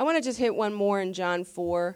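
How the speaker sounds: ordinary delivery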